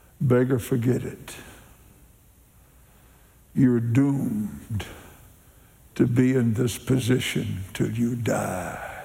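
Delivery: dark, half-whispering voice. Voicing a dark voice that tells a beggar to forget it: dark half-whispering voice. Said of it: "a dark voice whispers to him".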